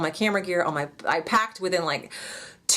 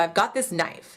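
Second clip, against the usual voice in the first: normal talking voice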